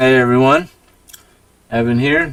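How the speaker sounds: loud speech muffled by a mouthful of food. Joining the others in the booth and greeting everyone, talking with a mouthful. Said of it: "Got a mouthful of sushi".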